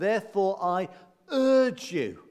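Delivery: strong stress on urge you, leaning on you.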